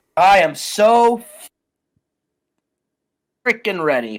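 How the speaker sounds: slow drawl, heavy sarcasm with fake eagerness. Answering whether ready for the upcoming match: sarcastic. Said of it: "I love your sarcasm".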